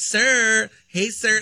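very loud, high-pitched, flirtatious calling out. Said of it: "that was, like, flirting for them".

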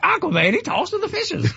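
put-on very high voice, laughing, stand-up comic style.

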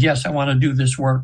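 normal talking voice

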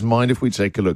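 ordinary talk

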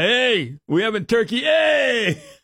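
put-on Brooklyn accent. Joking about the name Turkey A, imagining some guy from Brooklyn saying it, Brooklyn guy accent. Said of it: "It sounds like some guy from Brooklyn is like".

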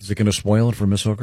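normal talking voice

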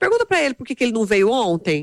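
ordinary talk, nothing marked

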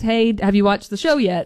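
ordinary talk, nothing marked

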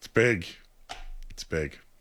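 breathy whisper, breaking up with laughter. Reacting to a repeated sound clip: laughing while talking. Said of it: "I can't stop laughing now".

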